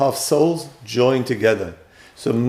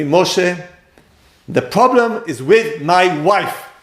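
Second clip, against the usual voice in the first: a man's high, slow, drawn-out shout; 6 semitones higher, 3 dB louder than usual. Retelling what a husband told the speaker: imitating a man shouting. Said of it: "That was his voice. I'm showing you what's, how he shouts".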